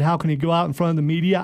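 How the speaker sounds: ordinary delivery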